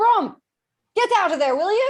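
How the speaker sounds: loud high-pitched calling out. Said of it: "she says".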